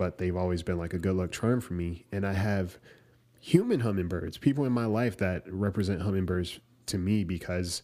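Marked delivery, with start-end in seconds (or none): none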